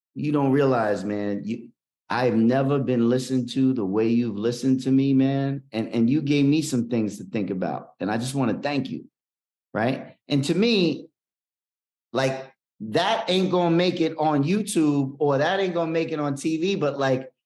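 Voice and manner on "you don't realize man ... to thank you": mock weepy, crying, heartfelt tone. Retelling what a crying man said at the airport: imitating a crying man. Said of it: "the dude's, like, crying".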